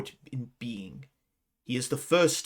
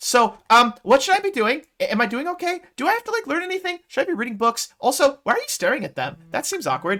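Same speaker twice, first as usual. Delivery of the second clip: very high, perky, upbeat voice with rising upticks; 13 semitones higher, 7 dB louder than usual. In a role-play, [name] asks someone by a cart questions, upbeat, upticked voice. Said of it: "in a like upbeat, upticked voice".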